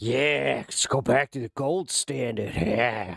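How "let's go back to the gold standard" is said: eerie, unsettling voice. Joking as a libertarian during talk about the Fed: creepy libertarian voice. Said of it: "my libertarian had, like, a creepy voice".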